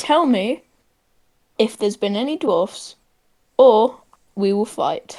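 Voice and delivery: menacing, intimidating, threatening tone. Answering how the character intimidates the bridge keeper: intimidating. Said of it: "How do you intimidate him?".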